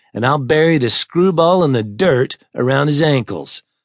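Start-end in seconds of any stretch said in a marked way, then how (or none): none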